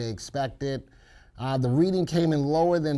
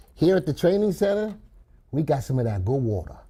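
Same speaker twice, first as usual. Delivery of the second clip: put-on Louisiana Cajun accent; 3 dB louder than usual. Speaking to Janet about the training center, in a put-on Cajun voice. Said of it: "I want to tell you in my Cajun voice".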